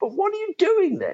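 lofty, very posh, upper-class, animated voice. Retelling what a man at a law firm asked him: very posh voice. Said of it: "in a very posh voice".

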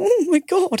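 very high voice fighting back choked tears. Retelling a phone call while hiding behind a hairdresser: imitating holding back tears. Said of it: "trying to hold back tears on this phone".

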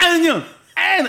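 high, loud, numb-sounding yell. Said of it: "with a frozen face, basically going".

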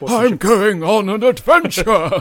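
put-on high-pitched, loud, projected old hobbit voice. After a compliment on the Bilbo impression, the speaker does a Bilbo impression again. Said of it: "That's a great Bilbo impression".

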